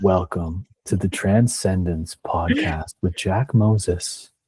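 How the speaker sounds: slow, soft, ASMR-style late-night radio DJ voice. Teasing the host about his new sound: imitating an asmr late-night dj. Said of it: "you sound like an A S M R late night D J".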